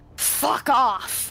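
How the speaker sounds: dropped, deep, hellish demonic voice. Describing a character at the table who now speaks in infernal: deep booming infernal voice. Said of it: "it's just this deep booming".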